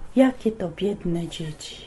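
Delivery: storyteller delivery. Recalling a TV program about orphanages, imitating its narrator: Czubówna impression. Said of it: "ta czubówna takim głosem".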